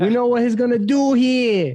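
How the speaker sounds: put-on loud Italian-accented yell.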